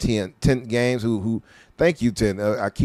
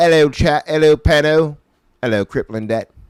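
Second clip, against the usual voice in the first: fake, showy put-on British accent, raised and high; 6 semitones higher, 7 dB louder than usual. Streamer greeting people in the chat, in a put-on British accent. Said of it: "That's my British accent right there".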